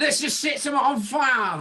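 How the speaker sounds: fake, bad, very high Australian accent. Joking about Australians, the speaker imitates one of them in a bad Australian accent. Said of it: "I don't know what accent that was".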